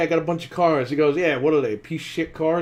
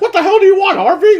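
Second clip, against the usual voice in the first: play-acted very high, loud, fed-up, irritated voice; 12 dB louder than usual. Retelling a movie scene, quoting the mayor: imitating the mayor's irritation. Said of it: "the mayor's acting like he interrupted a dinner".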